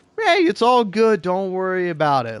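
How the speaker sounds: acted, kind, agreeable, easygoing and sing-song. Retelling what they usually say to calm others: imitating own kind easygoing manner. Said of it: "kind, easygoing".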